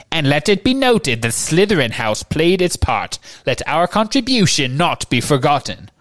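high, reedy voice, called out. Narrator reads Phineas Nigellus calling out from his portrait, high reedy voice. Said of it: "called in his high, reedy voice".

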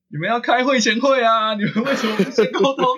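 very high, full-throated, acted-out shout. Retelling what they yelled when a character's speech was interrupted: retelling a shout at the screen. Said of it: "我那个时候就直接大喊".

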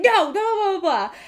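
very high yelled voice. Retelling how the speaker's boyfriend yelled at a man who swung at him, imitating a yell. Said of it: "My boyfriend starts yelling and he's like".

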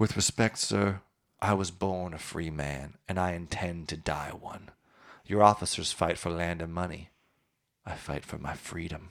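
measured, unhurried delivery. Quoting a line from a scripted scene about an old volunteer: Morgan Freeman voice. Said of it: "I'll do my best, um, Morgan Freeman".

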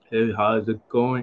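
low, soft, flat, dead-level unchanging monotone. Imitating a guy whose tonality never changes as he greets someone, flat monotone.

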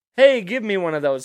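cute, playful, teasing tone. Retelling what a woman sitting outside with a friend said: retelling a teasing request. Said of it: "just teasing".

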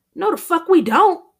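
sudden, shrill blurt, very high and very loud. A friend contradicts the excuse for turning down an invitation: blurting out. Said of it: "Harrell blurts out".

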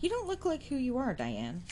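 playful, teasing scolding tone, sing-song and high. Another person teases Diane, playfully scolding. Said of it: "playfully and scoldingly battered their unsleeved arm".

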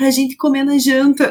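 put-on little boy's voice, said aside. Retelling a child's remark to his mother: imitating a child speaking softly. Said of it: "Daí ele fala baixinho assim".

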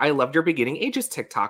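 normal talking voice

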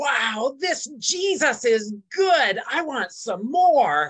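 very loud, high-pitched blurted exclamation. Retelling what he said out loud during church, in a very loud voice. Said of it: "but in a very loud voice said".

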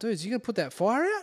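play-acted freaking out, high pitched. Retelling looking at the truck and the houses: retelling own freak-out. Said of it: "Freaking out".

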